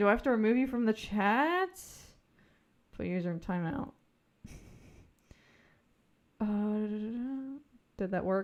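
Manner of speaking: mumbled, as if talking to oneself. Removing a user from the chat, mumbling to oneself. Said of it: "I'm mumbling to myself".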